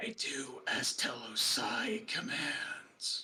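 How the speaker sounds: whispered, rasping, eerie, unsettling voice. Narrating a scene, voicing an elf answering the player: raspy unsettling voice. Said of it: "in a very raspy and unsettling voice".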